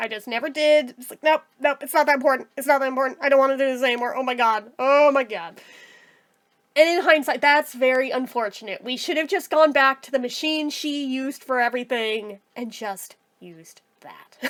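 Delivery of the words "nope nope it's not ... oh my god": put-on distressed, traumatized tone. Retelling her own reaction after the sewing-machine injury: imitating own traumatized self. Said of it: "'Cause I was so traumatized by that".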